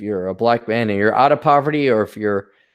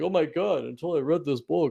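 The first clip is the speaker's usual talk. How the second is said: mock smart-person voice, much quieter; 5 semitones higher, 9 dB quieter than usual. Parodying readers praising a book, in a mocking voice of intelligent people. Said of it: "making fun of incredibly intelligent people with that voice".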